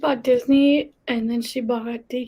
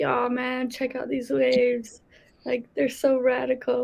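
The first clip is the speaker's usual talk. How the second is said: put-on American surfer-dude accent. Imitating a British friend putting on an American accent: surfer dude American accent. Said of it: "he'd have to sound like a surfer dude".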